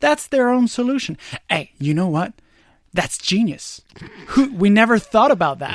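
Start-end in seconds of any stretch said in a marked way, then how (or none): 1.5-5.8 mock sarcasm laid on thick, very sarcastic. Reacting to a report that tells cities to tax more: very sarcastic. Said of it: "I'm being very sarcastic".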